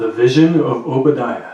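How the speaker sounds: loud, announcer-style radio voice. Starting a reading of Obadiah in a radio voice. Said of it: "In my radio voice".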